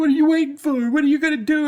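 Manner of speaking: loud, high-pitched screaming.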